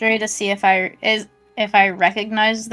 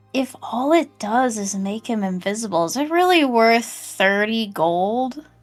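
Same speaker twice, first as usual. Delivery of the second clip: loud stage whisper meant to be overheard. A player pretends to whisper to a companion so the merchant overhears: stage whisper. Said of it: "I'm gonna pretend to whisper this to Lucy".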